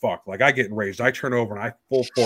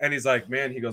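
plain

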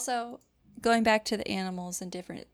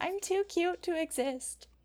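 tense dik-dik voice, higher pitch; 7 semitones higher than usual. Voicing a tense little animal that wants to be left alone: anxious dik-dik. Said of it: "They're just like".

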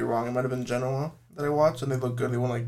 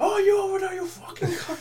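rowdy, very high, shrill, jeering shout. Speaker describing videos of fans at the league, imitating them shouting at players. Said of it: "Shouting at players".

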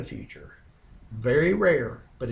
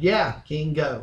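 mock insincere, sarcastic encouraging tone; 2 semitones higher, 4 dB louder than usual. Retelling how a prophet answers the king: imitating a sarcastic prophet. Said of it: "I believe he's being sarcastic".

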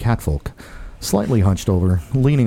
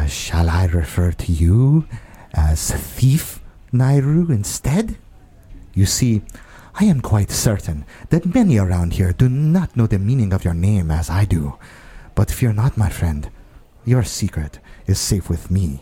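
hushed whisper, slower. Playing a character who leans closer to someone, looks around, and whispers. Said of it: "and then he whispers".

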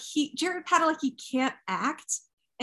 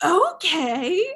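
put-on exasperated voice, higher and louder; 3 semitones higher, 5 dB louder than usual. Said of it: "It's just very exasperated".

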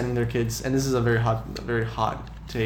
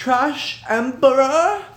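pitch rising upward through Trash Emperor; 14 semitones higher, 8 dB louder than usual. Insisting on how a title must be said: pitch rising through 'Trash Emperor'. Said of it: "a pitch that rises as you're saying it".

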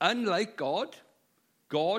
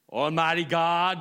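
put-on American prayer voice, louder; 6 dB louder than usual. Recalling a man at a prayer meeting, imitating an american prayer voice. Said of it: "but he became American".

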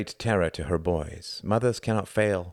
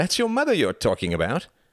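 high, sing-song, teasing and goading taunting tone; 7 semitones higher, 3 dB louder than usual. Reginald, yanking Tom down the stairs, answers Tom's insult: grinning. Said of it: "grinned Reginald".

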